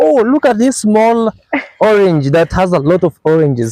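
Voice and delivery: high, swooping, surprised, thrilled excited squeal. Showing the pixie fruit to viewers, the speaker retells their own excited scream. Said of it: "start screaming".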